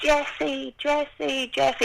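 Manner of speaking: frantic, desperate, high-pitched shouting. Speaker recalling an acted cave scene, shouting for a lost daughter: retelling shouting a name. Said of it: "and I'm shouting".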